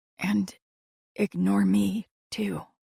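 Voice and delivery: hushed tone toward the end. A narrator reading a woman's line as she finishes her request, hushed tone. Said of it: "she finished in a hushed tone".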